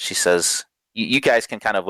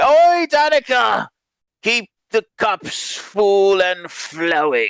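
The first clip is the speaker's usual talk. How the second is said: put-on very high, slow, drunken tipsy voice; 13 semitones higher, 3 dB louder than usual. Narrating drunk men who stumble into a bar and call out to danica, drunk. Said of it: "very clearly drunk already".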